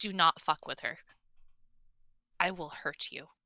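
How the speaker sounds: low, soft, flat, dead-serious deadpan delivery. Voicing Penelope as she turns sour and warns the listener, deadpan threat. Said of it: "just like fucking deadpan just tells you".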